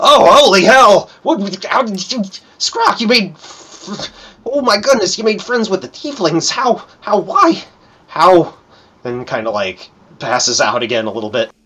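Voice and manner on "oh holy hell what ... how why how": put-on much higher, loud, astonished old lady voice. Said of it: "the tiefling, goes".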